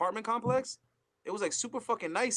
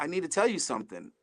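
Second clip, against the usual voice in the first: whispered, lower; 3 semitones lower than usual. Retelling how she leaned over at the dance: imitating a whisper. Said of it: "leans over and whispers in my ear".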